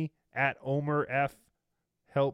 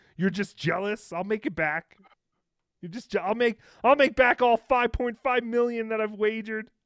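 put-on yell, much higher, louder; 8 semitones higher, 6 dB louder than usual. Imitating a man yelling at his chat, imitating someone yelling. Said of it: "now he's yelling at the chat for being jealous".

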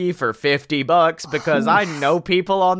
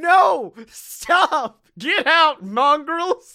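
put-on, very high, very slow, drawn-out screeching scream; 9 semitones higher than usual. Pitching a ride scene where a character with a gun screams: imitating a screaming character. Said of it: "he's screaming at us like".

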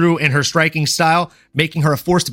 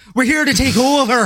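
higher-pitched taunting fighter voice; 8 semitones higher than usual. Trading quotes with another speaker: Conor McGregor impression. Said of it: "I can do a good Conor McGregor impression".

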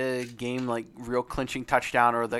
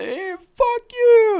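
put-on very high, very loud, shrill drunken yell; 11 dB louder than usual. Retelling a drunk fan nine rows up heckling the crowd: imitating a drunk heckler. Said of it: "Some old drunk dude".

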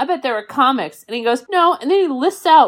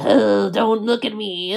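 put-on old man voice, slower; 5 dB quieter than usual. Describing an old man in a bookstore corner: imitating an old man. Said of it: "an old man in the corner being like".

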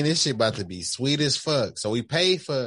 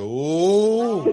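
high, loud heckler ooh. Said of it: "that ignorant person in the crowd".

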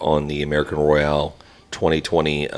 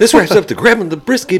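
peppy, lively, energetic, higher and louder; 8 dB louder than usual. Redoing a closing line after a flat first try: peppy delivery. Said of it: "there was some pep in that one".

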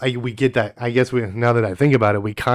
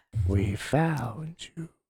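put-on witch voice, quieter; 2 semitones higher, 9 dB quieter than usual. Voicing a witch outside a window calling to Sailor: voicing a witch. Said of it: "one of the witches is outside her window saying".

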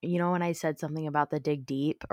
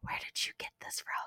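hushed, barely voiced whisper. Retelling how Kevin quietly asked you about something you were wearing the other day, whispering. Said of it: "he whispers to me".

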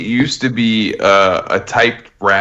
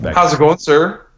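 courteous, polite, pitched-up customer-service voice; 7 semitones higher than usual. Speaker shows how he talks to a police officer, in customer service voice. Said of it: "put my customer service voice on".

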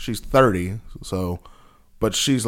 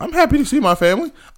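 voice breaking up and cracking, very high; 13 semitones higher, 4 dB louder than usual. Answering another speaker during a teasing argument, voice cracking. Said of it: "Why is your voice cracking so bad?".

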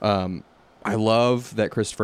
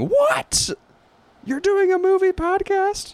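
very high, loud, drawn-out outraged disbelief; 5 dB louder than usual. Imitating a listener in their car reacting to the news: imitating a listener screaming. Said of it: "You're probably screaming in your car".

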